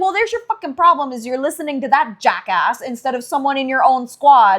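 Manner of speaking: acted-out angry tone. Retelling a character's comeback to a squadmate: acted-out angry retort. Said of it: "that was literally perfect".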